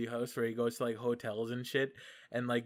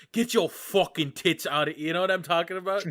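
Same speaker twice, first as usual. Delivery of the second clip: put-on London Cockney accent; 6 semitones higher, 8 dB louder than usual. Speaker quotes a man ordering people out of his kitchen, in a cockney accent. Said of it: "with his like like fucking London like Cockney accent".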